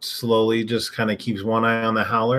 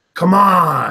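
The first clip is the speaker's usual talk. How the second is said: loud, high, full-throated roaring yell, stretched out; 6 semitones higher, 8 dB louder than usual. A player has their character yell at it to stare it down, roaring yell. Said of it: "Yell just like a vocal".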